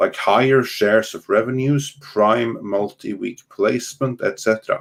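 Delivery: normal talking voice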